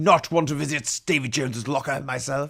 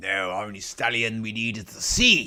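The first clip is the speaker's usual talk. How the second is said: put-on old-salt buccaneer pirate voice. Replying to a question about pirates, talking like a pirate. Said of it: "talking like a pirate".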